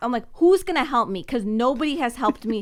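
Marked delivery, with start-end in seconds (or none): 0.3-1.2 high, fed-up, angry snapping outburst. Retelling a customer service call where the agent couldn't help: imitating her own snapping. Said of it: "I literally snapped".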